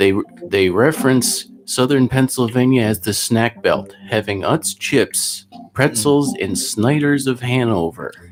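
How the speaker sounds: drawn-out, slow, unhurried, soothing narration. Describing how Josh talks over a keyboard, the speaker imitates Josh's low, slow talk. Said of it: "he talks kind of low and slow".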